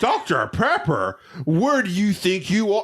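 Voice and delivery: high, snooty, sarcastic mocking tone. Retelling a waiter mocking a drink order: imitating a sarcastic, mocking waiter. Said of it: "He proceeds to literally make fun of me".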